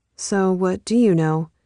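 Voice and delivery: plain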